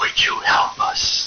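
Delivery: faint, hushed, breathy whisper. Retelling what the EVP recording in the basement said: whispered voice. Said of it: "we hear this whispered voice say".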